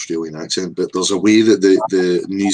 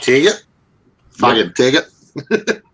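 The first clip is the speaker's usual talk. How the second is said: mock Australian accent, higher pitch; 6 semitones higher, 4 dB louder than usual. Contrasting how Australians would say ticket: imitating an Australian accent. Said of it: "Whereas the Australians are probably just".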